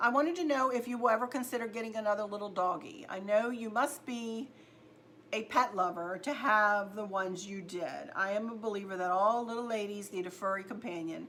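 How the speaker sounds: ordinary delivery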